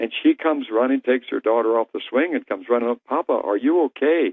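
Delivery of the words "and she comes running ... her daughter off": usual speaking voice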